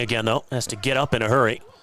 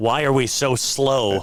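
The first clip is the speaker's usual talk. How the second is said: ordinary talk, nothing marked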